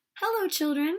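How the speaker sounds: sweet, high-pitched schoolteacher voice. Reading a story aloud, Miss Nelson greets the children: sweet Miss Nelson voice. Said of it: "someone said in a sweet voice".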